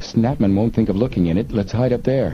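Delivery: ordinary delivery, nothing marked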